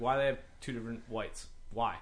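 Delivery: plain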